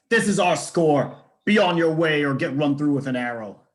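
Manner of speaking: loud shouted yelling. A player's character raises a crossbow and warns a stranger off, yelling a warning. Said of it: "I yell".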